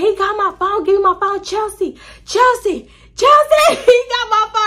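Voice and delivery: mock shrill, very high, repeated screaming. Recounting a fight where he took the phone: retelling a scream. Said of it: "and I'm just screaming".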